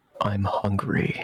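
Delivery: voice dropped right down, low-voiced. Playing a scene, voicing the woman being described, in a low voice. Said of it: "in a low voice".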